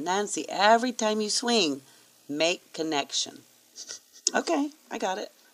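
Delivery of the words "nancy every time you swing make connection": put-on strong Spanish accent. Quoting her dad when he first handed her a golf club, in a strong Spanish accent. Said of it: "He had this really strong Spanish accent".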